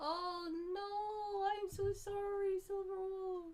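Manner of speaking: dismayed, high, loud, drawn-out wail.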